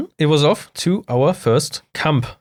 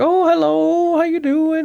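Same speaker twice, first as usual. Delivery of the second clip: put-on old British lady voice, much higher pitch; 13 semitones higher than usual. Retelling how an old lady answered the door, imitating a classic british old lady. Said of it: "Like this classic British old lady".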